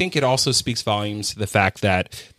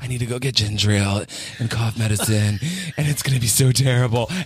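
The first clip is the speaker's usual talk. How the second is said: put-on cartoon character voice. Speaker recalls dreading errands while sick, sounding like Stewie. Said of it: "why are you sounding like Stewie?".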